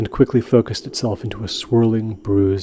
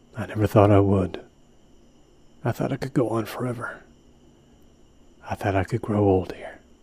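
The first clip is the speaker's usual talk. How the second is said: whispered, much quieter; 6 dB quieter than usual. A man lying against the cold ground whispers to his companion. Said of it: "Smith whispered".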